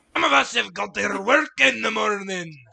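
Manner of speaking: very loud, very high, rough, shrill, booming shout. Voicing a neighbor a couple of doors down, woken by screaming: neighbor yelling from down the hall. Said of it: "you hear a couple of doors down".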